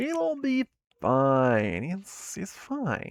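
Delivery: high, swooping sing-song reassurance, "fine" drawn out. After a game trade-off is explained, reassuring everyone, voice going high. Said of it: "I don't know why my voice got so high".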